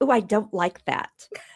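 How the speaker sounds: ordinary talk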